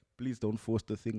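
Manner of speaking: ordinary talk, nothing marked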